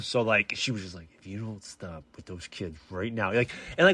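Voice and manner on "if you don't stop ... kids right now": through gritted teeth, lower and quieter. Retelling the wife's warning about wrestling the kids: imitating someone talking through teeth. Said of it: "talks to her teeth".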